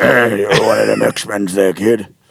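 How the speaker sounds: put-on chain-smoker voice. Imitating the same truck driver: imitating a heavy smoker's voice. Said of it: "I can only make him coach up".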